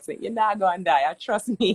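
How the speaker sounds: put-on Jamaican accent throughout. Retelling what a man told her about her fast, in a Jamaican accent. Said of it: "his Jamaican accent".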